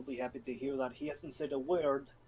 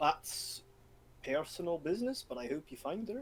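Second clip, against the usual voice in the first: put-on plain Scottish accent, just talking; 3 semitones higher than usual. A player answers a father searching for his daughter, in a scottish accent. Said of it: "I went into a Scottish accent".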